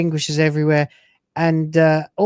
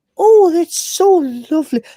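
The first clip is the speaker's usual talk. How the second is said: put-on overly nice psychiatrist voice, pitched higher; 12 semitones higher, 4 dB louder than usual. Retelling how the corrupted character turns into Brannigan the psychiatrist: imitating Brannigan the psychiatrist. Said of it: "he turns into Brannigan, the ship's psychiatrist, and he starts going".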